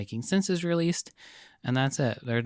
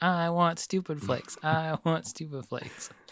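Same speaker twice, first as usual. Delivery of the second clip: put-on childlike, high little-kid talking voice; 5 semitones higher than usual. Imitating a little kid asking for a cereal: imitating a little kid. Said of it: "a little kid being like".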